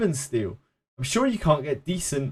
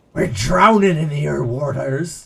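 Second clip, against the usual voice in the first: slow, terrible, botched put-on Cornish accent; 4 dB louder than usual. Put on a voice after wavering between Cornish and pirate, in a terrible Cornish accent. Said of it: "that was still part of Cornish".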